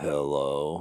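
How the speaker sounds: put-on sick, heavy, stuffed-up sci-fi villain voice. Retelling a call with the sick producer: imitating a sick Darth Vader-like voice. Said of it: "She sounds like Darth Vader".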